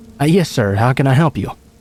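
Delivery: ordinary delivery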